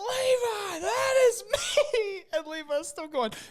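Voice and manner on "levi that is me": shrieking, very high, very slow, drawn-out scream. Retelling a game, the speaker quotes Brandon as his loot drops, imitating Brandon screaming. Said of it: "and he's screaming".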